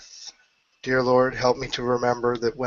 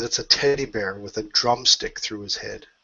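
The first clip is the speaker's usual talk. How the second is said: ordinary talk, nothing marked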